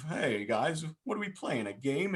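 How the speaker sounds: innocent, cheerful, naive happy tone. Voicing a pictured movie character at the start of the film: naive and happy. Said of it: "being, like, all, you know, naive".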